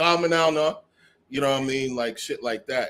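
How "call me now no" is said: put-on loud Jamaican accent. Showing the proper way to say the line: Jamaican accent. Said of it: "that's the proper way you would say that".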